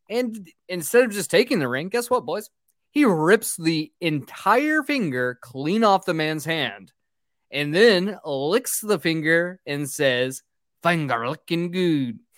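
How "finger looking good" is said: failed put-on Irish accent, drifting near Jamaican. Retelling a story to the boys, the speaker quotes a man in an attempted Irish accent. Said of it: "I need to stop trying to do Irish accents".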